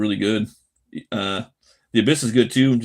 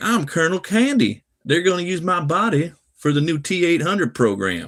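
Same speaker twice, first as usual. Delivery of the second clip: put-on Southern accent, pitched up; 8 semitones higher than usual. Describing a deleted scene where the character's voice was dubbed: Colonel Candy southern accent. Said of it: "they give him like a southern accent. He's like".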